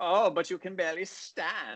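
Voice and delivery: clumsy put-on German accent. Complaining that the accents are awful, doing a bad Beerfest German accent. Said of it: "They sound like the guys in Beer Fest".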